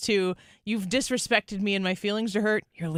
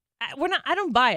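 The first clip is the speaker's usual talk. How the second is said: normal talking voice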